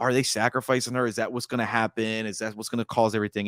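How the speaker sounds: usual speaking voice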